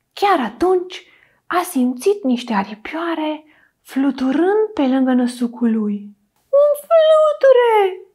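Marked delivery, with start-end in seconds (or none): 6.6-7.9 shrill, very high, loud little mouse squeak. Narrator reads the little mouse's line in a children's story, squeaking. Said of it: "A chițăit șoricelul".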